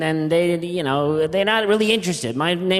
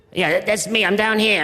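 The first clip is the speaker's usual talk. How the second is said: voice of a duck, as if hidden inside; 3 semitones higher than usual. Playing a duck stuffed inside a turkey, calling out: voice of a duck inside a turkey. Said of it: "coming a little lower".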